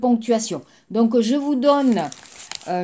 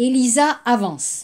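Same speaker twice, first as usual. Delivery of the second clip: statement-like fall, voice dropping on avance. French lesson on declarative sentences, falling pitch at the end. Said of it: "Donc vous entendez bien la phrase qui descend, la voix qui descend".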